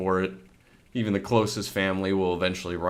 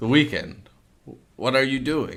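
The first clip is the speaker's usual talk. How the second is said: put-on old lady voice, much higher pitched; 5 semitones higher than usual. Acting a scene, one character repeats her question to the other, old lady voice. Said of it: "Old lady voice".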